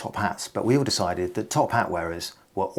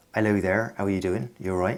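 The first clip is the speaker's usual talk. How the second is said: accent from Dorset. Interviewee showing how he used to sound, old Dorset accent. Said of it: "I used to sound a bit like this".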